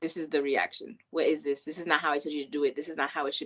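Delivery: put-on sassy, snippy delivery full of attitude. Retelling how a needy friend complained about a favor: imitating someone with attitude. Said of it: "come back, like, with attitude".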